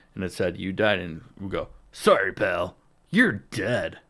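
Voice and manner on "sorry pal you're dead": looming, slow, ominous game announcer voice. Recalling failing a video game mission, the speaker quotes it in an ominous game voice. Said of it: "some ominous voice would pop on the screen".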